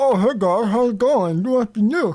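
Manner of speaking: speaking through food. Acting out a masked guest eating finger foods who greets newcomers, talking with mouth full. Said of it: "mask like kind of tilted up a little bit and like eating".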